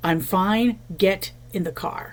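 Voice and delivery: slow, stern, curt, no-room-to-argue delivery. Speaker retells their father telling the family to get in the car, retelling a no-discussion tone. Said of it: "that tone of voice that brooked no discussion".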